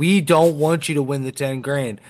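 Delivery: ordinary talk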